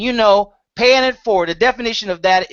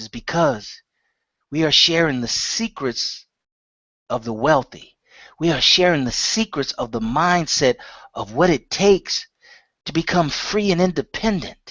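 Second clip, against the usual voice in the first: lowered, quieter voice; 5 semitones lower, 4 dB quieter than usual. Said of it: "I'm going to lower my voice".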